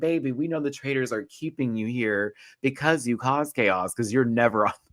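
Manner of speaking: put-on words bubbling with giggles. Retelling how she laughed at his theories: imitating someone giggling. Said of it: "She just starts giggling like".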